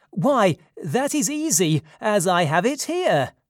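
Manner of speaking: joyful, eager cry, high-pitched. Reading a character's eager reply to a demand, crying out happily. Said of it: "Dionysus cried happily".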